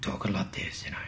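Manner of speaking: breathy, hushed, whispered noir narrator voice. Describing reading comic captions aloud, showing a Mickey Rourke noir voice. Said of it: "I was putting on my best noir voice".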